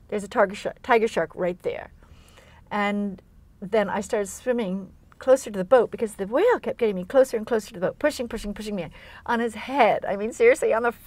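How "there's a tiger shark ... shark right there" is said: ordinary talk, nothing marked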